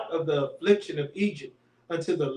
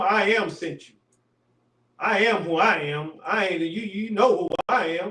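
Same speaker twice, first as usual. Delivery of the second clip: put-on, play-acted sarcastic delivery; 2 semitones higher than usual. Acting out the Lord's reply to Moses: imitating the Lord being sarcastic. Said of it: "He's being sarcastic right here".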